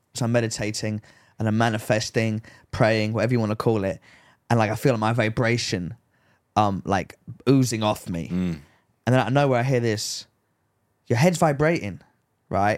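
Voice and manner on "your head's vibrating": put-on English accent. Retelling what a girl walking her dog said, in an English accent. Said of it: "in an English accent".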